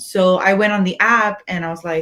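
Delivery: ordinary talk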